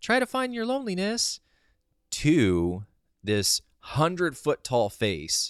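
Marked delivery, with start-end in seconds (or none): 0.0-1.4 very high, bright, light, bubbly voice. Retelling what a face in a vision said: imitating a light bubbly voice. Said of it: "light, colorful, bubbly".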